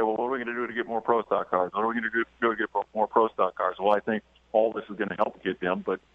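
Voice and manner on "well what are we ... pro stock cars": normal talking voice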